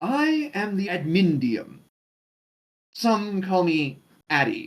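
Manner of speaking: strange, peculiar creature voice, slow and drawn out. Narrating a creature that introduces itself to the listener, Admindium's odd tone. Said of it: "it uses a particular odd tone with that last remark".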